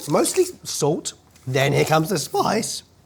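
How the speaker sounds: rising pitch. Tasting a spice blend as the heat kicks in: voice getting higher. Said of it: "My voice is getting higher".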